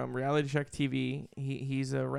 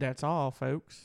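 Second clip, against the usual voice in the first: failed put-on cartoon pig voice, classic cartoon style. Speaker trying the catchphrase after someone else did it: failed Porky Pig impression. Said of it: "It's Porky Pig".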